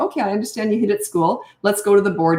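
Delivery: unruffled, calm, gentle, lightly lilting tone. Showing what to say when a child comes home after hitting at school, calm tone with a lilt. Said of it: "That is my tone".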